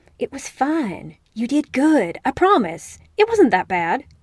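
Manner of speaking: reassuring tone delivered on a sigh. Stepping outside onto the porch, he reassures another player, sighing. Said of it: "Eric sighs".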